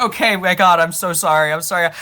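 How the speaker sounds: sudden, loud, scared, panicked burst. Planning a game bit, suddenly dropping the tough-guy act, mock-scared sudden apology. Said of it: "I'm gonna be like".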